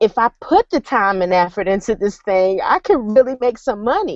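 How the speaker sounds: usual speaking voice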